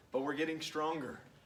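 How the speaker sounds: normal talking voice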